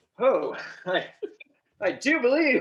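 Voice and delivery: theatrical, loud, swooping stage-actor delivery. Retelling a movie scene where a suspected informant speaks, shakespearean actor voice. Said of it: "he starts talking like a Shakespearean actor".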